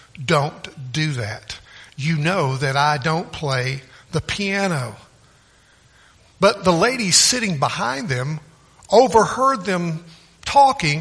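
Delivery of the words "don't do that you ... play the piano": very stern, severe, no-nonsense tone. Retelling what a woman told a man, in an imitated very stern voice. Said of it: "she says in a very stern voice".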